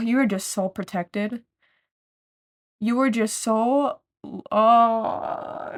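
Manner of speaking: choking up with tears. Giving an encouraging message to the listener, choking up with tears.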